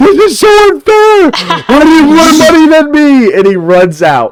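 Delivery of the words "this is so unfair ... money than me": very high-pitched, shrill, hollering yell. Retelling how a friend yelled about money: imitating Jack yelling. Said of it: "Jack yells".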